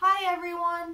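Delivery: loud, projected, full-throated voice. Teaching about throat vibration, repeating a greeting in a loud voice. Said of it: "in a nice loud voice".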